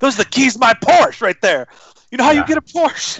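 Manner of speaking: high-pitched rousing pep-talk tone. Mocking another player's pep talk: Ben Affleck in Boiler Room. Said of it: "like she's in the movie Boiler Room and she's Ben Affleck".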